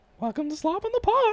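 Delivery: squeaky voice pitched way up high. Asked on the podcast to say the show's welcome, in Mickey Mouse voice. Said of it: "Slob on the Pod in Mickey voice".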